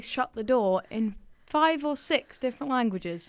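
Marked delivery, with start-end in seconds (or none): none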